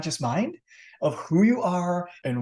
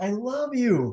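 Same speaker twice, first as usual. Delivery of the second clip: heartfelt, loving, sincere, pitched-up delivery; 6 semitones higher than usual. Explaining how words carry a charge, demonstrating a sincere delivery. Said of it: "it's very sincere".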